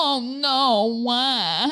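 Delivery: condescending, sarcastic "oh no", high with drawn-out "no". Retelling what someone said while looking at them, retelling a sarcastic 'oh no'. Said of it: "like sarcastically".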